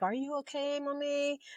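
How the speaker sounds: high, soft, tender, worried voice.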